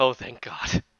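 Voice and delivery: hushed, half-to-self mutter under the breath. A game character reacting as the player comes up, muttered under her breath. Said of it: "she says under her breath".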